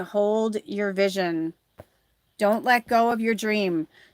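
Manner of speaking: usual speaking voice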